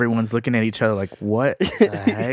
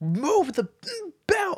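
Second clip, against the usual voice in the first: play-acted very high, loud, shrill, swooping yell. Retelling how he cussed when the package belt stopped, retelling loud cussing. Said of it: "he's cussing like super loudly".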